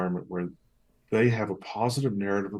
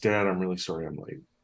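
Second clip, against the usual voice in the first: put-on dejected, downcast tone. Father retells what his son said to him, imitating a dejected apology. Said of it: "his feet are dragging and he looks dejected".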